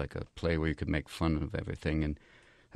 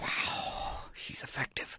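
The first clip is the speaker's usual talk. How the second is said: mock-impressed cobra voice, quieter. Speaker acts out a cobra's reaction in a joke, mock-impressed cobra voice. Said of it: "Even the cobra's going".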